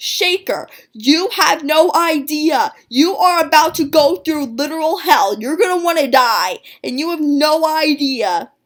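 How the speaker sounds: high, loud, all-out scream. Retelling what she wanted to say to her past self: imitating a scream. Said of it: "I so badly wanted to scream at her".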